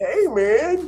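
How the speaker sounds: relaxed, lazy drawling voice. Showing how the line sounds: the Dude voice. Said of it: "It's a little like, uh, the dude".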